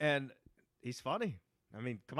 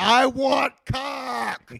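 mock drunk yell, higher and louder; 9 semitones higher, 10 dB louder than usual. Retelling how Kevin yelled out the van window: imitating Kevin yelling drunk. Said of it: "rolled the window down and yelled".

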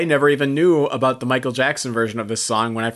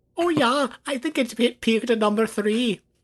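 put-on German accent; 10 semitones higher than usual. A Scottish player answers a quiz question in a German accent impression. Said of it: "the Scottish guy is doing a German impression".

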